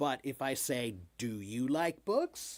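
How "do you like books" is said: question-like rising tune on "books". Contrasting a statement with a question, rising pitch at the end on books. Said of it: "it goes up".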